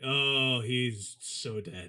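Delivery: put-on defeated voice. Retelling a scene from the episode: imitating Jet, really defeated. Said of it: "really defeated".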